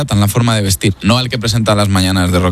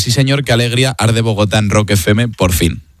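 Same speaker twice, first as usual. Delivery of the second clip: ordinary talk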